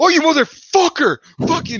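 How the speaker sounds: put-on panicked outburst. Retelling how he reacted when the car slid on the road, imitating panicked yelling. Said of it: "He's like panicking".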